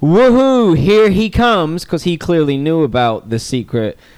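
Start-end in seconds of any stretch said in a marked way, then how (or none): 0.0-1.8 play-acted excited whoop, high and loud. Retelling what a man two rows behind shouted during the film, imitating a man whooping.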